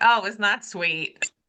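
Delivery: plain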